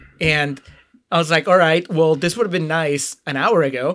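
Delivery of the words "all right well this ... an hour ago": usual speaking voice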